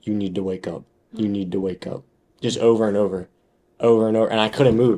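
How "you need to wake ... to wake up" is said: dropped, deep movie-style voice. Retelling a night when a voice kept repeating a line: imitating a deep voice. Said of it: "that deep voice".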